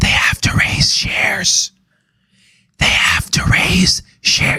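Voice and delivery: put-on whisper into the mic. Explaining that a company must raise shares, imitating President Biden whispering. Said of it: "I'm gonna do a President Biden".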